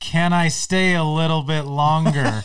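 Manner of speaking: pleading, repeated slowly and loudly.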